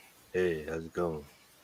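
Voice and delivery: put-on deep voice. Trying a new way of talking after disliking own recorded voice: put-on deeper voice. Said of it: "Maybe I should talk deeper".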